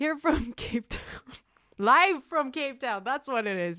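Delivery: loud, high-pitched shouting. Speaker announcing where they are broadcasting from: yelling. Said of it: "Sorry, I'm yelling now".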